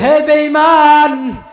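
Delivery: fierce preacher's cry, slow, high and loud.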